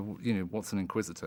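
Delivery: plain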